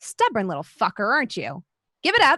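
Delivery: put-on female voice, animated and swooping. Voicing a woman heard through a door: woman's voice. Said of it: "You hear a woman's voice, and it says".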